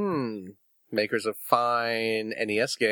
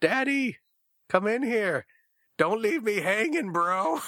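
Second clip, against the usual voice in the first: put-on, very high, long, stretched-out holler; 11 semitones higher than usual. Retelling how a four-year-old son yelled from his bedroom: imitating Finn yelling. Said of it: "he yells out from his bedroom".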